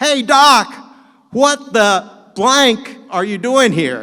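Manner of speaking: very high, loud, booming call. Retelling a man calling out to him from the back of the room, Alan's loud booming voice. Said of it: "this loud, booming voice".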